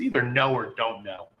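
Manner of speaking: put-on condescending, mocking tone. Retelling how she made fun of him, acting it out mock-condescending. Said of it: "she's condescendingly making fun of him".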